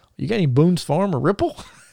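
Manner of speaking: put-on high Alabama accent. Speaker retells a waiter taking wine orders; Bobby's Alabama accent. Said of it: "he's talking in an Alabama accent".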